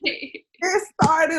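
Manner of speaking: high, tearful, pleading panic, on verge of tears. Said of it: "And I'm just like".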